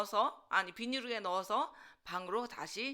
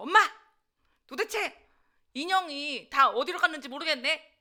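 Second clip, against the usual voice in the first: high, loud, demanding, interrogating tone. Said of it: "엄마한테 또 추궁을 했죠".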